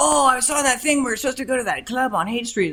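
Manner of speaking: bad, high-pitched Icelandic accent. Imagining a visitor from Iceland coming to the Haight, the speaker uses a bad Icelandic accent. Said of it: "that's a bad I- Iceland Icelandic accent".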